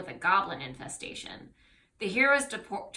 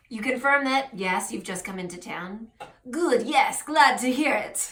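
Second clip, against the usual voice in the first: convincing, well done put-on French accent; 3 semitones higher, 3 dB louder than usual. Voicing a character in the scene, with a French accent. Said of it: "really good French accent".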